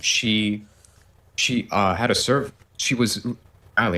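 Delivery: very slow, halting, stuttering stumble. Explaining what happened with a fan server, stuttering. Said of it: "I'm stuttering right now".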